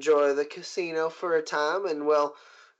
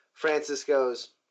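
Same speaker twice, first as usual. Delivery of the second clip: plain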